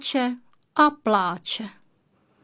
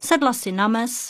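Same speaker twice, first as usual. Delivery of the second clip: ordinary delivery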